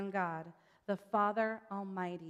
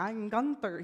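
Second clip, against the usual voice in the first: bad put-on cartoon pig voice; 5 dB louder than usual. Describing a story's pig characters, the speaker introduces one: bad Gunther impression. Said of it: "That was a bad impression".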